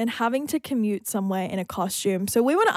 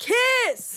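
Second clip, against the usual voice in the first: high yelled call of "kiss". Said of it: "I would just yell out".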